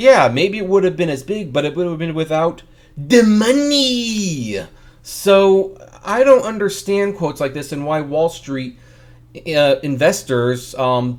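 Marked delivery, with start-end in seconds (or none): 0.0-4.7 put-on cartoonish voice, "money" stretched out. Giving own view on a Netflix show's success: Mister Krabs voice. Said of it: "I do it in my mister Krabs voice".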